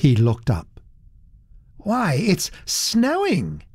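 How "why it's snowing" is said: very high, swooping cry of great surprise. A man feels something cold and wet on his cheek and looks up; exclaiming in great surprise. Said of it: "he exclaimed in great surprise".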